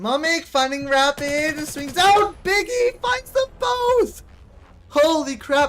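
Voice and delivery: hoarse, high, drawn-out shouted play-by-play. Commentator calling a match, shouting until losing voice. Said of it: "I can't continue shouting".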